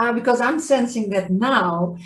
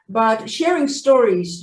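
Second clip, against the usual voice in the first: ordinary talk, nothing marked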